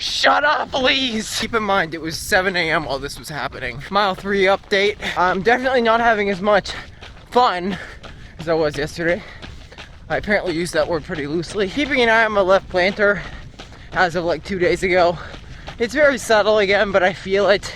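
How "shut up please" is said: put-on high, slow, cranky, grumpy old-man yell. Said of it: "I felt like some old geezer".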